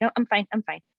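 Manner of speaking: plain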